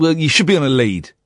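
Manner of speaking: ordinary talk, nothing marked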